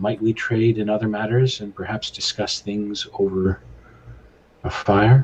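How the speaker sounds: hushed whisper. Player in a tabletop game speaking in character to another character, whispering. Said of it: "I will just kind of whisper".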